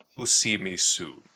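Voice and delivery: deep, low warlock voice. Voicing a warlock speaking from the darkness: Christopher Lee voice. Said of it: "in the most Christopher Lee voice".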